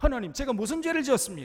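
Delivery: loud, high-pitched indignation.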